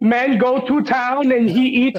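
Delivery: high, slow, drawn-out quizzical voice. Asking another speaker if he meant it, quoting in ding dong voice. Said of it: "Were you trying to do the ding dong voice".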